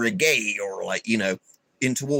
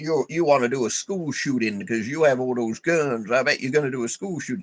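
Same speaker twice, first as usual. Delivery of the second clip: put-on rural Southern good-ol'-boy voice. Imitating people who mock gun owners: American Bubba voice. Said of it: "they have American voices like this".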